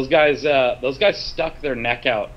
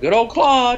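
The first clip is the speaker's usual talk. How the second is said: high-pitched, joking, very high little country twang; 10 semitones higher, 3 dB louder than usual. Acting out Dwayne joking around about Justin, imitating Dwayne's little country accent. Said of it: "Dwayne had his own little country accent he'd do".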